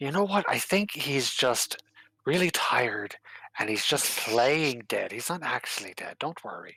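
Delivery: hushed whisper. A player's character leans over the table to the Empress, whispering. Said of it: "[name] whispers".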